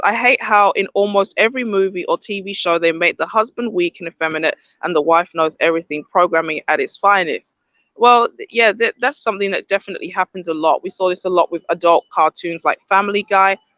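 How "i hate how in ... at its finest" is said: ordinary talk, nothing marked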